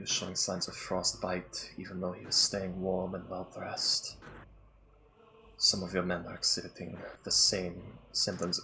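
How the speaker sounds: whispered, close in. In a role-played scene, a character comes close to the listener, whispering. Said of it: "she's gonna like get close and whisper in".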